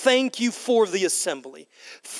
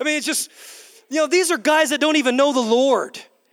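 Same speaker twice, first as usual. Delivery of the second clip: plain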